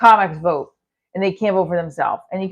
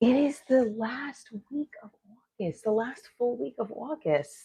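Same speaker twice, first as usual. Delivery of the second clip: hushed, breath-only, very quiet half-whisper; 4 semitones higher, 11 dB quieter than usual. Announcing that it is the last week of August, half-whispering. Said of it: "Why am I whispering that?".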